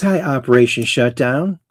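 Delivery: ordinary talk, nothing marked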